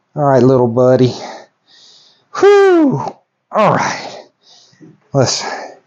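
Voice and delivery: winded, huffing and puffing, slow. Speaker talking to viewers after a long day of driving, huffing and puffing. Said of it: "I'm huffing and puffing".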